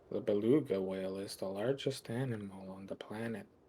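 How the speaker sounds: slow, bored, uncaring documentary narrator voice. Mocking old documentaries, imitating a bored documentary narrator. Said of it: "the narrator just was not paid enough to care".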